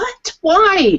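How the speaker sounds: very high, disbelieving, exasperated screaming shout. Recalling a movie they found horrible, imitating screaming at the TV. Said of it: "screaming at my TV".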